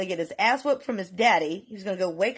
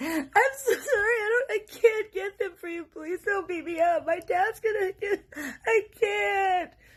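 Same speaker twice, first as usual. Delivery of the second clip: mock very high, blubbering, sobbing child babble; 12 semitones higher than usual. Retelling a kid who starts crying and begs: imitating a kid crying. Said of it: "Just starts crying. And is like".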